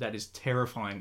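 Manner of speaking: ordinary talk, nothing marked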